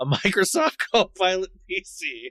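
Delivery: very slow, high words breaking into laughter. Naming an ad to avoid buying, laughing while talking. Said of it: "I tried to say that without laughing".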